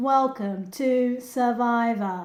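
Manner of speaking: flat, monotone host voice on one tone. Critiquing how the Survivor host speaks, the speaker imitates him: monotone JLP impression. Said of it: "you are a bit monotone".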